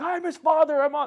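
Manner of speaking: very high-pitched, loud yelling. Retelling a father demanding answers on the phone: imitating father yelling. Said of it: "yelling and everything".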